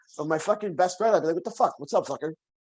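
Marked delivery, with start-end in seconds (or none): 1.4-2.4 put-on rough casual talk. Retelling how he greets his best friend: imitating own rough talk. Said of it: "why are you being so rough?".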